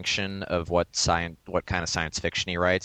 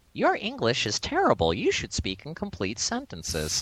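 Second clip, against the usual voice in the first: put-on high, sing-song little girl voice; 7 semitones higher than usual.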